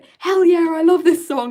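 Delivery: very loud, high-pitched yelled outburst. Recounting a random guy in the background, retelling his scream. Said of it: "just screamed".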